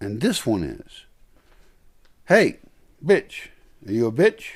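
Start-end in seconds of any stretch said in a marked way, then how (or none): 2.3-4.6 deliberately harsh, rough, raised, pitched-up tone. Talking to a dog, mock harsh tone. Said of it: "Why you say that in such a harsh tone?".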